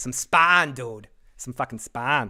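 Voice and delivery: natural Boston accent slipping in. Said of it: "As my Boston accent comes".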